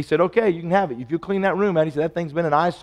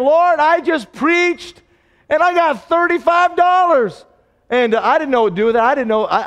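mock, very high, loud, tearful sobbing; 10 semitones higher, 6 dB louder than usual. A preacher recalls a church that loved him, retelling his own crying. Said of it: "I remember just crying".

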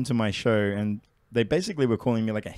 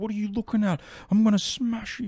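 put-on furious, drunken-sounding, really angry, very high-pitched voice; 11 semitones higher than usual. Retelling how a drunk man threatened someone: imitating a really angry drunk. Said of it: "really angry".

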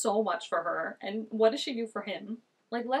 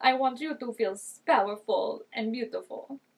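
man's voice with put-on Russian accent. Quoting a man the speaker finds creepy, in a Russian accent. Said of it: "Why am I making him Russian?".

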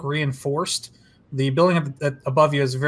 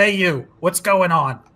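called out like a guard; 3 semitones higher than usual. Game master voicing a Trandoshan with a gun who shouts at Cart, Trandoshan guard shouting. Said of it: "in basic shouts at Cart".

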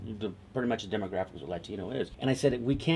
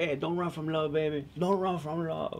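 put-on high street holler, calling out; 7 semitones higher than usual. Retelling a scene of a conga player in a park: imitating someone yelling. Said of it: "He's yelling out".

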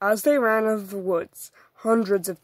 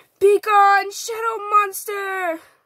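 very high, loud, commanding yell; 12 semitones higher, 4 dB louder than usual. Narrator reading a story character's line aloud, shouting. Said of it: "Grace shouts".

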